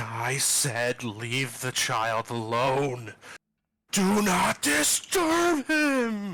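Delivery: loud, slow, very drawn-out, wrathful ghost voice. Voicing a glowing ghost who turns on intruders: angry ghost voice. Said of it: "it just looks angry".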